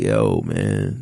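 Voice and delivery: play-acted weepy, sobbing, tearful crying voice. Retelling how a little homie reacted after being left behind: imitating someone crying. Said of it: "Terry crying, like".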